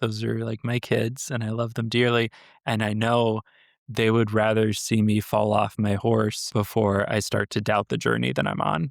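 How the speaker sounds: ordinary talk, nothing marked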